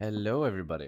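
sultry, sexy, seductive voice. Greeting listeners as a podcast starts: sexy hello. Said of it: "your hello gets sexier and sexier".

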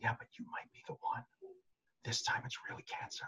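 whispered, hushed inner voice. Acting out the irrational inner voice for a listener, in a whispering inner voice. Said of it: "that whispering voice that you just gave there".

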